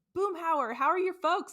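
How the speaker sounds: acted thrilled, loud, high voice. Recounting a favorite scene, the coach greeting Boomhauer: excited Coach Sowers imitation. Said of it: "He's so excited".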